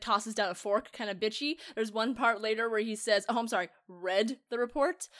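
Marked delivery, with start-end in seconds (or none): none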